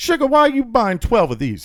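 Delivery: put-on very high, loud, swooping older woman voice.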